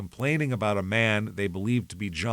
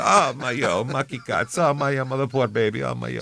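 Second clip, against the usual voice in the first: doting grandmother voice, pitying lament; 4 semitones higher, 4 dB louder than usual. Imitating a grandmother told a baby is sick: imitating grandmother's lament. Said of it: "if you told her a baby was sick, she'd go".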